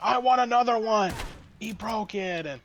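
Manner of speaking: high, demanding put-on yell. Retelling how a customer yelled at the customer service staff: imitating someone yelling. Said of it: "he's yelling at the girls in customer service".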